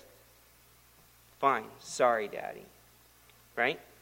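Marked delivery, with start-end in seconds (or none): 1.4-2.6 low, quiet, begrudging voice. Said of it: "he begrudgingly says".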